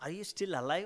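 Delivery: mocking sarcastic tone. Retelling a question the brother asked sarcastically, mimicking his sarcasm. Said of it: "My brother was like a sarcastically".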